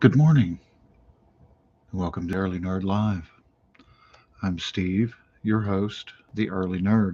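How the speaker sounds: quiet, hushed, soft-spoken delivery. Host opening a morning live show, trying not to wake someone, talking quietly. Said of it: "I'm talking quietly".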